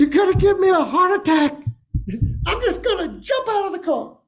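acted, very high, shrill, full-on screaming rant. Speaker acts out a man in the car, retelling a scream. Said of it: "he is literally screaming at the top of his lungs".

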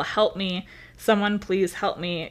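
plain

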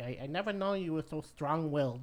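put-on German accent. Recapping a scene after an argument: Mrs. Tanner's German accent. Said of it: "in her German accent".

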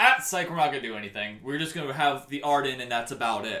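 usual speaking voice

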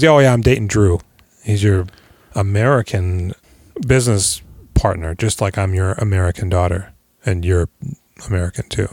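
ordinary delivery

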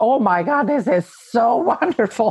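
gushing, relieved exclamation. Recalling giving birth and going into the water, retelling a scream of relief. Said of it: "I screamed out when I went into the water".

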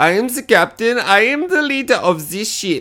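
high-pitched, deliberately bad German accent. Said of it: "It's a terrible accent".

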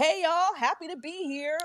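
acted, bright, chipper, very high-pitched voice. Retelling how a wrestler came out all smiley: imitating a smiley greeting. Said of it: "he was all smiley".

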